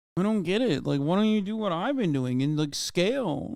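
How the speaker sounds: sulky, hurt, whiny tone. Mocking a complaint just heard in a clip: mocking whiny imitation. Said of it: "He just sounds so whiny".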